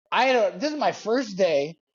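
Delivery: ordinary talk, nothing marked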